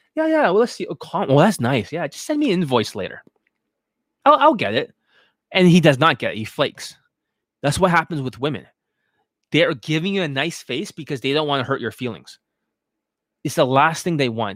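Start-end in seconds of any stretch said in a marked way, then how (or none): 0.2-5.0 put-on pleasant, polite, noncommittal sing-song delivery. Acting out a reluctant buyer who doesn't want to hurt feelings: imitating someone smiling politely. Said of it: "So he's smiling".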